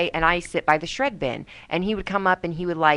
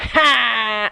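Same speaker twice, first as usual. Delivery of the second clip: one long, drawn-out, held ha laugh; 4 semitones higher, 3 dB louder than usual. Imitating how another person laughs. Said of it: "He laughs like this".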